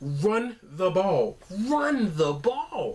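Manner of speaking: high, slow, all-caps emphatic delivery. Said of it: "I tweeted out all caps".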